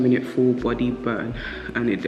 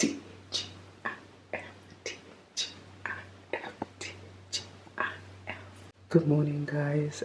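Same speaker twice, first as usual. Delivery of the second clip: hushed, whispered voice; 3 semitones higher, 12 dB quieter than usual. Greeting the audience early in the morning, whispering. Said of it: "I'm whispering because it's early".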